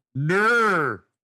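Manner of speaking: put-on Australian "no" as "ner", high, drawn out. Showing how Australians say no: mock Australian 'no' as 'ner'. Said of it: "Put an N in front of that".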